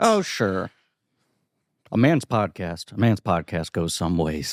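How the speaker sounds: stock cowboy voice, very deep and low. Speaker plays a cowboy in a conversation, generic cowboy voice. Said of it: "doing more generic cowboy voice".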